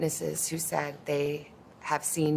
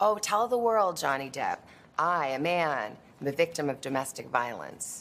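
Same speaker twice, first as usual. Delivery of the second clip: ordinary delivery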